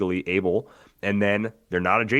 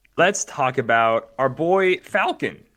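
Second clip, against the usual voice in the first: high, slow voice cracking midway; 6 semitones higher, 4 dB louder than usual. Turning to talk about a favorite figure in the set, voice cracking. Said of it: "my voice cracked doing that".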